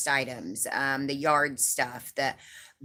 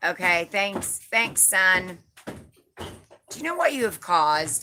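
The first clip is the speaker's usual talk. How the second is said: dripping heavy sarcasm, high and sing-song; 5 semitones higher than usual. Answering a commenter who called the speaker Mom: very sarcastic. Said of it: "in a very sarcastic way".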